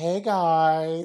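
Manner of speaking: the word guys dragged and drawn out. Retelling what Miss Minutes said on arrival: Miss Minutes voice. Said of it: "And then she's just like".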